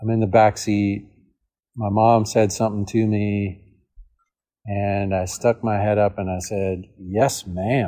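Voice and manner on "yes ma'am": put-on, goofy, enthusiastic voice. Retelling a childhood reply to mom from the back seat: imitating own goofy enthusiastic reply. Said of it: "Just kinda like that".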